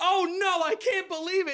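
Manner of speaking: high, loud yelling in dismay. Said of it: "and I yelled".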